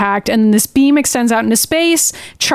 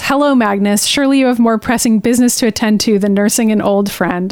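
ordinary delivery

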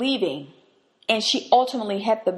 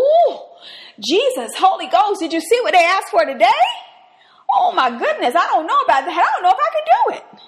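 mock very high, swooping, worried, fretful dithering; 10 semitones higher, 7 dB louder than usual. Acting out God fretting on his throne over big requests: mock-worried God voice. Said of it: "you'll never find him on the throne going".

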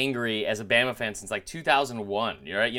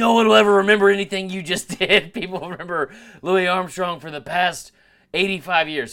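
livid, furious, heated tirade, raised and high; 6 semitones higher, 7 dB louder than usual. Retelling a stranger's angry internet comment: imitating a livid stranger. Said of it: "He was livid".

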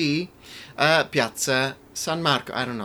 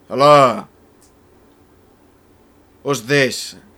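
put-on very loud Sicilian grandfather voice; 10 dB louder than usual. Asked for a first impression, doing his grandfather answering the phone: Sicilian grandfather impression. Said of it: "He was Sicilian, so he would answer the phone".

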